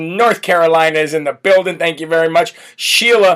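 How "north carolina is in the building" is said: ordinary talk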